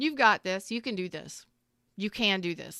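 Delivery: put-on certain, assured, doubt-free, unquestioning tone. Quoting what a younger man told the speaker, imitating a certain, unquestioning tone. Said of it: "there wasn't even a question in his voice".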